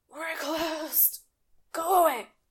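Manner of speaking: put-on high, frail, worn-out, decrepit old voice. The game master voices someone inside a barred door as players knock; decrepit voice. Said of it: "a decrepit voice from inside says".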